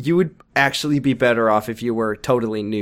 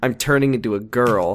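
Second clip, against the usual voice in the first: plain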